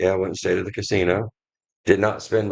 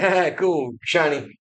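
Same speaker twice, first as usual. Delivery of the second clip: put-on, high, half-listening distracted exclamation; 8 semitones higher than usual. Teasing the other speaker for getting distracted: imitating a distracted listener. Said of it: "you're like".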